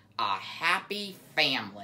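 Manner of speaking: snarled with contempt. Aerith stares at the beavers and goes on, snarled with contempt. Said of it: "he snarled with contempt".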